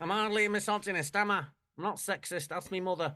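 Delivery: high-pitched, heated, passionate, fully committed protest. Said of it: "defending himself passionately on The Word".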